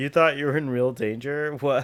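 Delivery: mock speech with laughter while talking. Acting out characters who laugh at someone for feeling in danger: imitating someone laughing while talking. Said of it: "they're, like, laughing".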